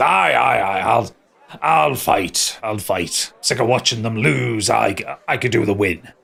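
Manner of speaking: put-on voice of a stout dwarf. Voicing a stout-looking dwarf who agrees to fight: stout dwarf voice. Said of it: "stout-looking dwarf in fr-, in front of you and goes".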